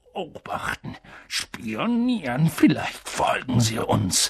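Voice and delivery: low, puzzled, muddled, bewildered murmuring. Reading the uncle's reply to the aunt, a confused murmur. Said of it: "murmelte Onkel Vernon verwirrt".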